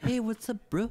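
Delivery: put-on, high-pitched New Zealand accent. Describing a big rock-like guy, speaker imitates his greeting in a New Zealand accent. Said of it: "him though to have this voice".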